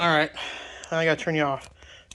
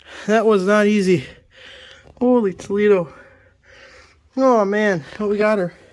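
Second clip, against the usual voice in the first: very loud, out-of-breath panting, huffing and puffing; 4 semitones higher, 10 dB louder than usual. Finally freeing a stuck part with a wrench, huffing and puffing. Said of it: "how I'm huffing and puffing".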